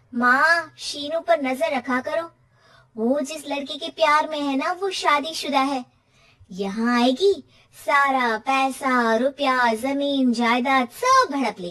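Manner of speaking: sly, scheming, spoiled cartoon girl voice. Daughter warning her mother in a cartoon story, cartoon daughter voice. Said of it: "Hindi कहानी- कपूत बेटी cartoon story #kahaniya #kahani #cartoonforkids #funnystories (uploaded 2024) / [name] माँ को एक औरत से बात करते पिता की फोटो दिखाती है। / माँ देखा".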